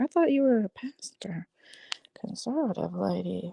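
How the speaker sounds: incredulous, disbelieving whisper.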